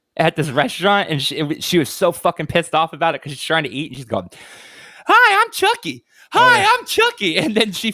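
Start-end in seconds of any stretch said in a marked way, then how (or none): 5.1-7.4 very high, slow, stretched swooping voice. Retelling a tic at a restaurant: imitating someone doing a Chucky voice. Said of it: "She basically turned into Chucky".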